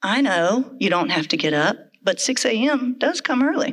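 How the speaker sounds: mock dry delivery. Speaker retells how he answered the kids' protest, retelling a dry reply. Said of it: "he would dryly respond".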